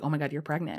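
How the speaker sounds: ordinary talk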